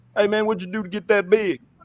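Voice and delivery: put-on prison inmate voice.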